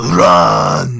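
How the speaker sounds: thunderous, very loud, booming giant's bellow. Voicing a fire giant who stops and shouts to the others: fire giant shouting. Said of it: "you just hear him shouting".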